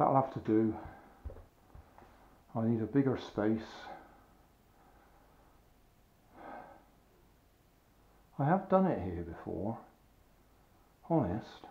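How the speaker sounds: breathless, winded voice. Stopping after repeated tries at turning in a space that is too small, out of breath. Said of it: "out of breath".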